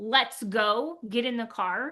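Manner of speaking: mock sharp, impatient tone. Retelling how she sounded rushing the kids, imitating her own sharp tone. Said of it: "a tone to her voice".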